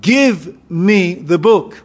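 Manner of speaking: very slow, drawn-out delivery. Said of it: "he goes to the angel and he says".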